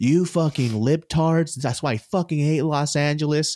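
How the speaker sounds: mock lady's voice, mild yelled rant. Retelling a bathroom quarrel where a lady screams at someone: imitating a lady screaming. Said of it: "This lady screaming at her".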